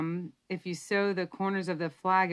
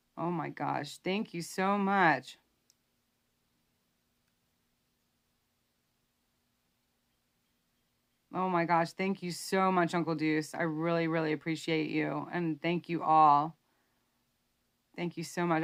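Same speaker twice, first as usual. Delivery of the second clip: choked up, voice catching with emotion. Thanking viewers and Uncle Deuce for their support, choked up. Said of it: "I just get a little choked up".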